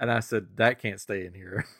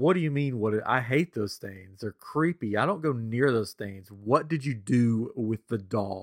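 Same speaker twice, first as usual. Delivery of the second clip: completely earnest, unjoking, dead serious delivery. Retelling asking a spouse about a missing doll: imitating own dead serious tone. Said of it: "dead serious".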